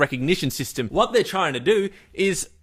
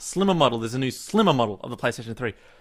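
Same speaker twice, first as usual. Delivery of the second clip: plain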